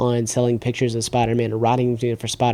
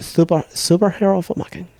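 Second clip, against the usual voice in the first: high-pitched, affected, put-on fancy accent. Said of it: "this is my accent".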